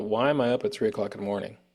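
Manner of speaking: plain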